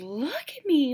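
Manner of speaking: very high, loud, frantic hysterical outburst. Describing a woman in a picture, the speaker quotes her: imitating someone freaking out. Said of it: "Like she's like freaking out".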